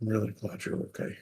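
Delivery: quiet under-breath muttering. Voicing a character who speaks to someone drifting off: hushed, under his breath. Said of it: "hushed under his breath".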